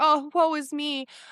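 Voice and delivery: very slow, drawn-out, high, self-pitying whine. Imitating her past self as the girl always whining: mock self-pity. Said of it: "I was literally the girl that was like".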